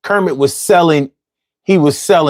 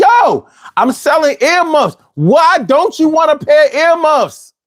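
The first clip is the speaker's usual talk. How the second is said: very high, flustered, frustrated squealing voice; 12 semitones higher than usual. Retelling a puppet sketch where Grover gets flustered selling earmuffs: imitating frustrated Grover. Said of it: "he got all flustered and, and frustrated".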